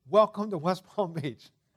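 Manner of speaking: very loud, very bright and cheerful voice. Retelling a young man's greeting to a group that had just landed, mock-cheerful greeting. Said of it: "He said very cheerfully".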